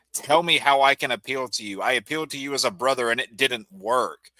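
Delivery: plain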